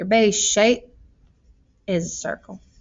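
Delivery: Southern accent briefly slipping and creeping in. A speaker working through a volume problem, briefly slipping into a Southern accent. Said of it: "I got a southern accent there for a second".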